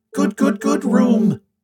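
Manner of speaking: squealing, very high voice, a full octave up. Narrating a character's reply after being shown the lab, a high-pitched squeal. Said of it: "he squeals. His voice is a full octave higher".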